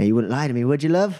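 sly, shady, pressing street-hustler voice. Voicing a hustler who leans in too close: voicing a shady street hustler. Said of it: "He leans over a little bit too close and goes".

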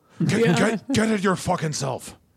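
gruff put-on Scottish accent. Imitating a McDonald's commercial: Brian Cox impression. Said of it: "the Brian Cox McDonald's commercials".

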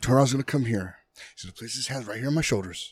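calm, courteous, polite, measured delivery. Retelling what another person said about tony robbins: imitating someone speaking politely and calmly. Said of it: "he said this very, like, politely and calmly".

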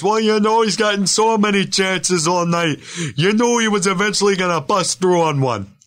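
very high TV hockey play-by-play announcer voice. Quoting what someone always says about a player, imitating Dano. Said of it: "Dano always says".

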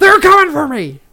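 loud, high put-on screaming. Showing another speaker how to do the bit louder: screaming Alex Jones impression. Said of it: "a little louder and just like screaming".

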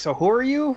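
very high-pitched, annoyed tone. Retelling a movie moment, imitating an annoyed Ben Affleck Batman. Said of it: "Affleck is just annoyed that he's there".

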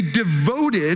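leaning heavily on the word 'devoted'. Speaker reading a passage aloud to an audience, stress on 'devoted'. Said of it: "did you catch the emphasis there?".

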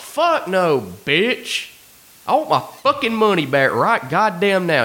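put-on, raging, high-pitched screaming. Retelling how a man screamed at a lady, imitating a man screaming. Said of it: "like screaming at this lady".

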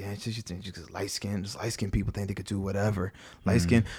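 very quiet, low grumbling under the breath. Retelling how an annoyed man reacted, the speaker imitates him muttering under his breath. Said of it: "he was muttering under his breath".

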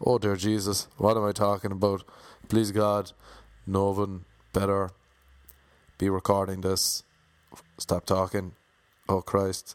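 ordinary talk

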